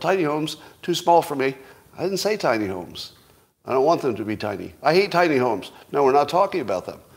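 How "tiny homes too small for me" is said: half-yelled mild outburst, pitched up. Imitating commenters who yell back at an idea: imitating people yelling. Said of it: "The N P Cs will yell".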